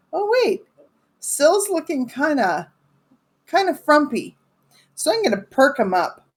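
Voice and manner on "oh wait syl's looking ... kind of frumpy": angry, simmering, pitched-up, still-steaming tone. Voicing a character who notices an ally looks frumpy: still steaming with anger. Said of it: "still steaming, I notice through my anger".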